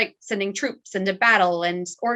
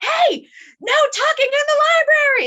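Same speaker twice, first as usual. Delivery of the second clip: very high, shrill, loud scolding yell; 7 dB louder than usual. Describing a librarian who yells at people for small offenses, imitating her yelling. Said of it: "It's just like yelling at them".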